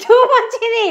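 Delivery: playful mock outrage, high, loud and laughing.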